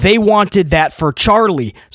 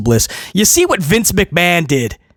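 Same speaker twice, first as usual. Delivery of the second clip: plain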